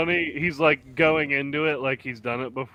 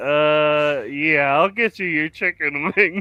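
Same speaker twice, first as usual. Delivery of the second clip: mock, full of pity, with a drawn-out "uh"; 2 semitones higher, 4 dB louder than usual. Retelling a movie waitress answering a customer: imitating a pitying waitress. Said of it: "she just has so much, like, pity for him".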